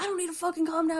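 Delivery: play-acted, freaking-out angry blowup, pitched high. Retelling a movie scene, Mills answering Somerset, Mills freaking out. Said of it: "And he's like freaking out".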